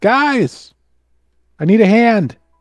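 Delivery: very high, slow, drawn-out yell. Calling in character to the others for help: yelling for help. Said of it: "I'm yelling".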